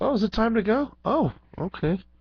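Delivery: high, startled realization.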